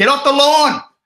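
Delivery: put-on very high, loud, shrill, cranky old-man yell. Joking about yelling at passers-by from the front lawn, mock-grumpy old man yelling. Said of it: "be the grumpy old man who yells at people".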